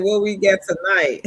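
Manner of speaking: normal talking voice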